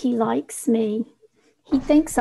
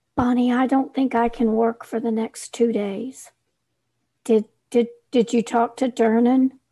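usual speaking voice

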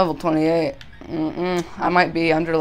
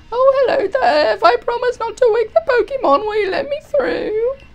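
put-on very high pitched elderly grandma voice; 4 dB louder than usual. Playing a Pokemon game, the speaker voices a character asking Team Yell to pass: old grandma voice. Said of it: "that's a good old grandma voice".

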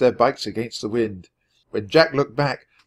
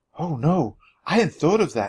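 much higher whisper; 6 semitones higher than usual. Narrator reads Annie's reply to Jack, whispered. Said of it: "Annie whispered".

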